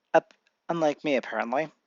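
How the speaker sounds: ordinary delivery, nothing marked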